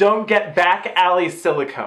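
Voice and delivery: ordinary talk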